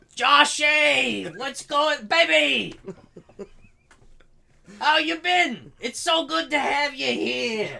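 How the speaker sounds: New York guy accent, shrill, high, booming, very loud. After offering to do an accent, greeting Joshy in a New York guy accent. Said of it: "I was gonna do my New York guy accent".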